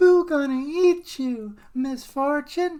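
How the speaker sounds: very high, very loud belted cartoon voice. Telling a story, then speaking as Majin Buu: Majin Buu voice. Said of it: "I wanted to do the voice".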